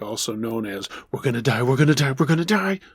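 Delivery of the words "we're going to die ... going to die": chaotic, panicked voice. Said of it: "One that was absolutely chaotic".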